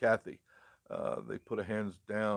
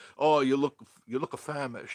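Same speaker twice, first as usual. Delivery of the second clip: put-on thick Italian grandma accent, high and loud; 5 semitones higher, 7 dB louder than usual. Remembering the grandmother who cooked for them, the speaker imitates grandma's heavy accent. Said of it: "she had a very heavy accent".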